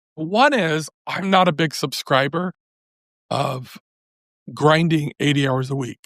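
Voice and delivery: slightly hoarse voice with halting, stop-start phrasing. Guest answering an interviewer's question about business lessons, slightly hoarse voice. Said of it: "my voice is a little hoarse".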